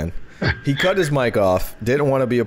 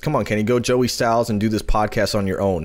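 normal talking voice

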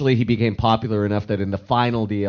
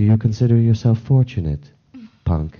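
completely flat delivery with zero emotion. Showing how an alien species speaks: Blasto voice, completely without emotion. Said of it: "speaks completely without emotion".

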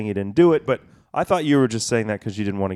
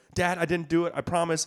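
put-on crying voice, higher and quieter; 8 semitones higher, 4 dB quieter than usual. A father retells his son's denial, imitating Henry crying. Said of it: "Henry's crying and he's all worked up".

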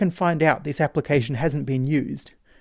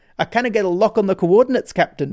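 heavy Scottish brogue, laid on thick, pitched up; 5 semitones higher, 4 dB louder than usual. Quoting the voice that answers a beam-me-up request, in a thick Scottish accent. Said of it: "in a thick Scottish accent says something like".

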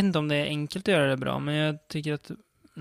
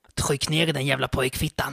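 put-on assumed Skåne accent. Quoting a sick film character's best line, Ingar's line in Skåne accent. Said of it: "nu ska jag försöka imitera här på lite skånska".

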